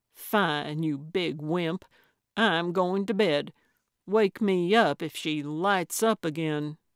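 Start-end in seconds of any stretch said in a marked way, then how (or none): none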